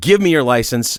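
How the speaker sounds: plain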